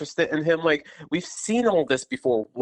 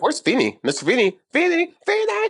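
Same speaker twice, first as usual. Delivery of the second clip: play-acted, very high, rising, climbing, escalating calls; 11 semitones higher, 4 dB louder than usual. Retelling a TV scene, calling for a neighbour: imitating Eric's escalating calls. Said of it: "it just escalates".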